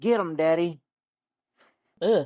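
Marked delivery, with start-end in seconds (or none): 0.0-0.8 fake rural country accent. Retelling a woman's voice heard from inside the room, in a redneck voice. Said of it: "in sort of a redneck sort of way".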